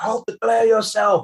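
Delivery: very high, shrill, loud shouted voice. Voicing a running guard with shield ready: guard yelling loudly. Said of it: "he does yell it loud enough".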